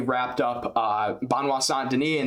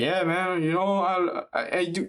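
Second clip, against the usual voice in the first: totally bland, slow, dragged out, pitched up; 5 semitones higher than usual. Imitating a fighter answering questions at a media day: imitating Carlos Solberg's bland talk. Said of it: "he's very bland when he talks".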